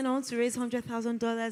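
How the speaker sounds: shy, timid, half-ashamed, sheepish voice. Retelling own past ask for funding while shy: imitating own soft, timid ask. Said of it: "I'll say it with a soft".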